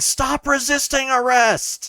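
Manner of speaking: high-pitched screaming voice, very high. Retelling a player's character beating someone up during a game; imitating someone screaming. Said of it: "starts screaming".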